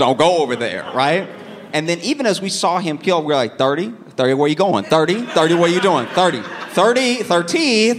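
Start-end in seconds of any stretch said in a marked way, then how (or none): 6.1-8.0 very slow, high, drawn-out calling voice. Retelling calling after a kid called 30, calling a name slowly. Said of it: "Started saying it slow like it was his real name".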